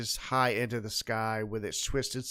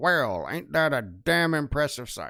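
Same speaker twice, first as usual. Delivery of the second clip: put-on grizzled old kobold character voice, louder; 4 dB louder than usual. A disembodied voice speaks from behind the listeners; grizzled old kobold voice. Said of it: "grizzled old kobold".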